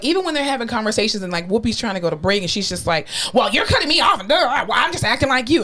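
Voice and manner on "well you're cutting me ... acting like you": put-on childish, pitched-up, toddler-like voice. Imitating Meghan McCain cutting in on Whoopi: imitating Meghan McCain acting childish. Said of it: "She just acts like a two-year-old".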